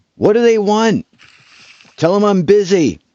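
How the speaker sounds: distant shout, very high and very loud. Narrator voicing a woman upstairs answering the visitors: woman yelling from upstairs. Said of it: "you hear a a female voice yell from upstairs".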